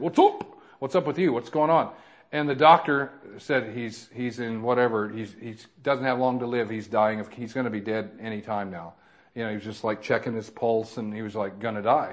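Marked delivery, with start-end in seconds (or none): 0.0-1.9 put-on English accent, strange and oddly clipped. Retelling what he said to the man on the stretcher, imitating a strange english accent. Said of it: "strange little English accent".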